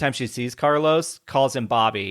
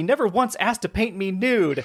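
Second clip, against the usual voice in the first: mock angry, pitched-up, yelling outburst; 5 semitones higher than usual. Describing a show's cast, quoting a character's girlfriend, imitating her yelling. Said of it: "she even yells like".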